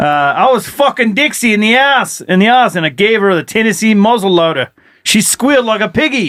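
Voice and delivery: put-on Australian accent. On a show, retelling what he said, in an Australian accent. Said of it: "in an Australian accent".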